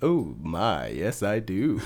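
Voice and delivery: very slow, lingering, low drawl. Answering a request for a George Takei impression. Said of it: "pretty good George Takei".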